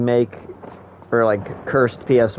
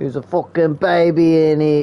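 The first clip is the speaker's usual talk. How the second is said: put-on British accent, pitched up, held throughout; 5 semitones higher, 4 dB louder than usual. Repeating the line again after noticing they said it like a British person, British accent. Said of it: "I can't stop".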